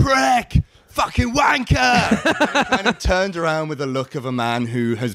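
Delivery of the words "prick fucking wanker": very high, shrill shouting. Recalling recognising a man and yelling at him: retelling a shout. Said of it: "So I shouted".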